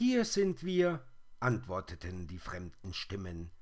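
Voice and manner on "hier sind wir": very high, loud, whirring spider chorus of voices. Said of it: "Das mach ich noch mal".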